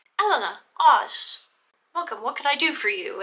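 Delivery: put-on British accent. Acting out Kaju's greeting in a retold scene, Kaju's fake British accent. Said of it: "In Kaju's uh, uh, fake British accent".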